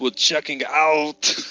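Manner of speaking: put-on, thick, laid-on French accent. Speaker quotes a movie killer's one-liner: imitating a thick accent. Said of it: "his very thick accent".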